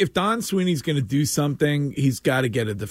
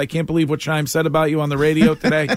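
plain

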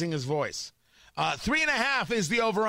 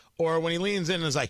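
ordinary talk

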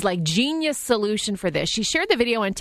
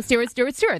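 ordinary talk, nothing marked

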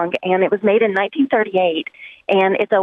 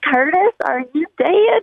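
mock, annoying, grating, high-pitched scream; 7 semitones higher than usual. Recalling a scene where a woman character screams, imitating a high-pitched scream. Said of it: "and it's when she screams".

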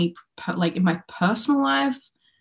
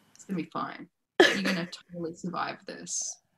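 hushed, utterly level, very quiet deadpan; 3 semitones lower, 10 dB quieter than usual. Showing how she would have said it to them, deadpan. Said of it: "with that whole deadpan".

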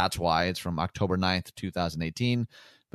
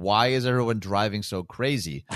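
usual speaking voice

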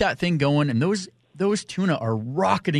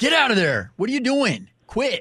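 put-on shrill, very high shouted bark; 10 semitones higher than usual. Retell how the driver kept shouting at the man messing with the live bait tank, imitating someone yelling. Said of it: "Tobeck keeps yelling at him".

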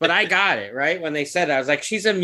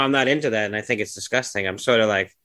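usual speaking voice

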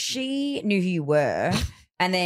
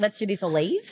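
usual speaking voice

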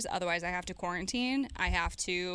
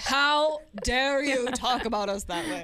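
fake British accent, high, slow, drawn out; 5 semitones higher, 6 dB louder than usual. Mocking angry people's reply with a put-on voice: British accent. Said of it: "Still British".

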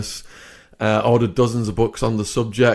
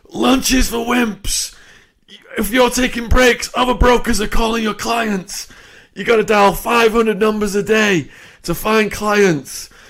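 acted-out, high-pitched screaming rant; 11 semitones higher than usual. Retelling how the boss yelled at the brokers: imitating a boss screaming. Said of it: "he'd be screaming at us".

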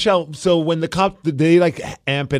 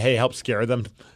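ordinary talk

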